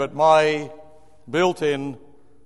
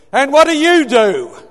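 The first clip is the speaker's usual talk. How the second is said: brash, booming voice, very loud and very high; 11 semitones higher, 8 dB louder than usual. Retelling a woman questioning them while they pretended to sleep, imitating her big loud voice. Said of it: "in this big, loud voice of hers".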